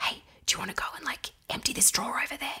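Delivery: soft, hushed whisper. Retelling how they whisper a silly task to a screaming two-year-old, whispering. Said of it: "then we just whisper".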